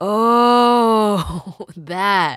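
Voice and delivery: loud, laughing, with a drawn-out oh. David answers his mom about the bump on a girl's head, laughing. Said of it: "What is so funny?".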